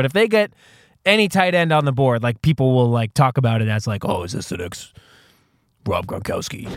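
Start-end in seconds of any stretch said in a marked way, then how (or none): 4.0-6.7 near-whispered, breathy, hushed sports analyst voice. Imitating how people talk about a new tight end: generic football analyst voice. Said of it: "the generic, like, football analyst voice".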